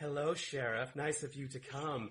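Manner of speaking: put-on, unnecessarily creepy, sinister eerie voice. Acting out a movie character greeting the sheriff in the church, imitating an unnecessarily creepy delivery. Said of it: "in a really unnecessarily creepy way of saying it".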